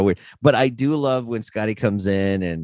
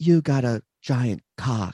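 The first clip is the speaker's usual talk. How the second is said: slow, stilted, very wooden delivery; 4 semitones higher than usual. Quoting an actress's line from a filmed scene: imitating wooden, stilted porn acting.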